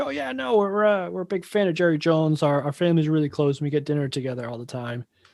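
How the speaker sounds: uncomfortable, halting, stumbling awkward speech. Retelling answers to softball interview questions, imitating Robert Kraft sounding awkward. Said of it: "super awkward in this too".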